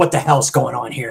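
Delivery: voice getting mad, angry outburst. Retelling how a movie character reacts, imitating someone getting mad. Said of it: "he gets all kinds of mad".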